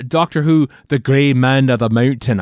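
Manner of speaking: loud, laid-on Scottish accent. Announcing a new audio story title: scottish accent. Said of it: "I have to say that in a Scottish accent".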